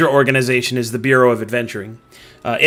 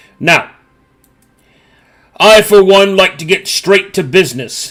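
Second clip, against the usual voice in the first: acted mouth-full talking, higher and louder; 6 semitones higher, 4 dB louder than usual. Voicing Gorv Heltergeist welcoming visitors from the Bureau: acted talking with mouth full. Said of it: "he says as food flies out of his mouth".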